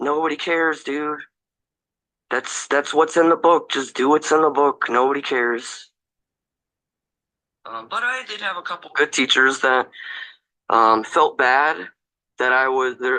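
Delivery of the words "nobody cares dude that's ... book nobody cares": casual, nonchalant, offhand don't-care tone. Retelling how teachers answered arguments about the book: imitating nonchalant teachers. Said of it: "they would just nonchalantly be like".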